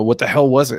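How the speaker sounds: kind of loud call-out. Voicing one of two approaching figures in the fog: said kind of loudly. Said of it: "just kinda says kinda loudly".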